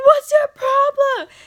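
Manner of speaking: very loud, high, shrill, confrontational yell. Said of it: "a good five minutes of yelling at him".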